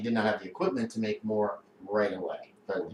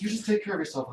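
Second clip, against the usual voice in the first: terrible, very high put-on lady voice; 9 semitones higher than usual. Acting out a lady from work answering a sick call: imitating a lady who works there. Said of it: "That's a terrible voice".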